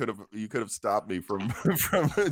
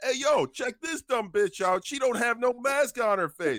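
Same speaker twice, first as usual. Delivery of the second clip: put-on, raised, loud, hollered voice; 13 semitones higher than usual. Retelling shoppers calling out a maskless woman: retelling a yell. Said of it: "So I yell out".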